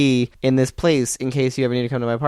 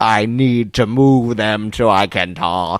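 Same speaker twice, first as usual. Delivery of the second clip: very slow, strained, dragged-out, effortful delivery; 3 semitones lower than usual. Imitating how he talks, as if someone holds his cheeks down: Jesse Ventura impression. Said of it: "it's as if someone's holding his cheeks down and he's like".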